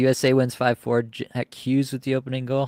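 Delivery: ordinary delivery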